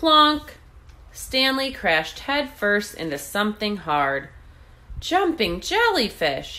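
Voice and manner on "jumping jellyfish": sudden, exclaiming cry. After crashing headfirst into something hard, a swimmer is crying out. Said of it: "he cried".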